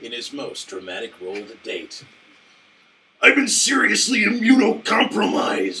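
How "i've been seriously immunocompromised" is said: put-on wrestler voice, very high and loud. Parody movie trailer line, in a Macho Man Randy Savage voice. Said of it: "that was just to do the Macho Man voice".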